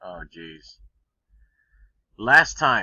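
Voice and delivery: very loud, deep, exasperated, frustrated outburst. Playing a game, trying one last time after losing: frustrated. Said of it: "hearing the frustration in my voice".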